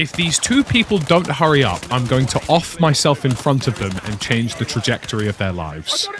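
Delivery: ordinary talk, nothing marked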